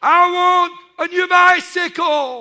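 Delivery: shrill, very loud, high shout at top of voice. Retelling a boy praying to god for gifts, imitating shouting at full voice. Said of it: "shouting at the top of his voice".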